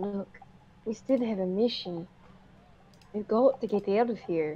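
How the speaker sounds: speaking in an acted whisper. Speaking in character to the group about a mission: whispering in character. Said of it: "Desana kind of whispers to them".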